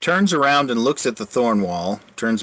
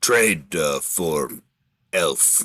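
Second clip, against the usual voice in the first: deep ogre growl, lower pitch; 6 semitones lower than usual. Narrator voices the ogre pointing at the elf, Blugra growling ogre voice. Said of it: "[name] not sad. He is hungry. / He points the broken haft of his tree branch toward the thorn wall and then looks at you. / Growls back at you throatily. I can't quite make my voice as deep as its. /".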